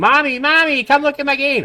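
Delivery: put-on very high little-kid squeal, toddler scream. Comparing asset-cobbling to a three-year-old with Legos, imitating a child screaming. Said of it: "and then screaming".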